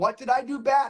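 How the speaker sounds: ordinary delivery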